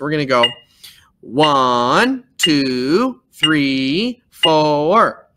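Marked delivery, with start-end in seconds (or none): 1.2-5.1 very slow, voice pulsing between beats. Showing learners how to count quarter notes: pulsing the voice between beats. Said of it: "you're gonna pulse your voice like that".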